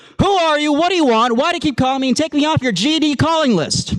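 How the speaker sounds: put-on very high, sweetly calm, polite voice. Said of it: "very calmly, very politely picked up".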